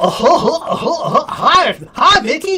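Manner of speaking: high, drawn-out cartoon dog voice. Explaining where the word goofball comes from, doing the Disney character: Goofy impression. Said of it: "that's Goofy. I used to do a pretty good Goofy imp- impersonation".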